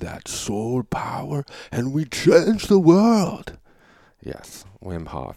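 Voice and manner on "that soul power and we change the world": very loud, very high belted cry. The speaker, who had a podcast with him, does a Wim Hof impression. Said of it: "I've mastered his elocution".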